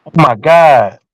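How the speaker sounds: crying, words forced out through tears. Retelling running into a friend who broke out crying: imitating Eve crying. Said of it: "she broke out crying".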